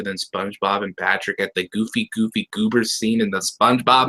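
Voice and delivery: plain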